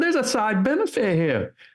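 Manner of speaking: put-on New Hampshire accent. Speaker quotes a blue-haired woman from New Hampshire, in a New Hampshire accent. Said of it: "I'm going to do my best New Hampshire accent".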